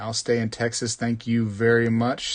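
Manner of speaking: ordinary talk, nothing marked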